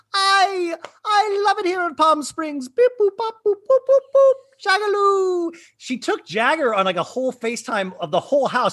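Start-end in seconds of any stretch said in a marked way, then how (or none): 0.1-5.5 put-on fussy robot voice, higher pitch. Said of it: "'cause he always sounds like C three P O from Star Wars".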